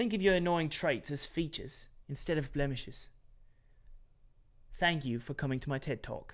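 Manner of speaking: put-on British accent. Reading a viewer's chat message aloud: British accent. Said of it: "I should do this in a British accent".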